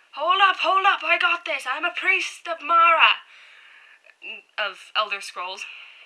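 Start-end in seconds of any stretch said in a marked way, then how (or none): 0.2-3.2 put-on loud shouting in a Scottish accent. Recounting a guy who came up playing a priest of mara, retelling his yell in scottish accent. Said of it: "he started yelling in this Scottish accent".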